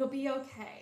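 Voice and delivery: soft voice, catching and choked up. Repeating a comforting line while reflecting on it: choked up. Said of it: "I'm getting a little choked up thinking that".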